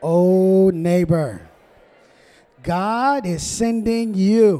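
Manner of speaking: big, loud, slow, smiling, joyful sing-song call.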